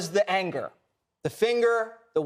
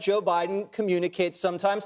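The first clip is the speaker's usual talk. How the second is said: plain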